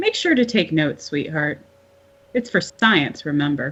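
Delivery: ordinary delivery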